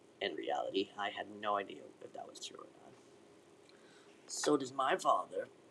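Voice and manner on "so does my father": slow, drawn-out, taunting whine. Mimicking Amir's reply back at him, mocking whine imitating Amir. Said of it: "mimicked me in a whining voice".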